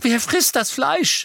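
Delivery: very high, horror-stricken cry. She backs behind a tree and asks again, in a horrified voice. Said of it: "mit grauenerfüllter Stimme".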